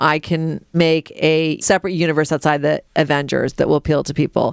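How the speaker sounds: ordinary talk, nothing marked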